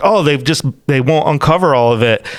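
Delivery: normal talking voice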